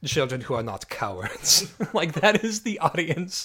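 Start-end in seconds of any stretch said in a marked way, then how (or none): 0.0-1.7 German-accented English, put on. Rephrasing a commenter's reply about a movie's audience, in a German voice. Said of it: "just like German voice".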